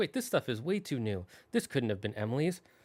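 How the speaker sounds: ordinary delivery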